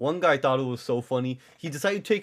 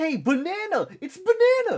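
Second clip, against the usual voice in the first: mock very high, stretched-out teasing yell; 4 dB louder than usual. Retelling what everyone yelled on seeing a banana costume: imitating people yelling. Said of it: "That's what they were yelling".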